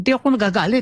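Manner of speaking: high, fast, angry, irritated rattled-off delivery.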